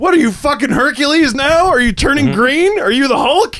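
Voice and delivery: very high-pitched, shrieking, screamed rant. Retelling a man yelling from the bench after the speaker bulked up, retelling a scream. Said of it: "Just screaming at me".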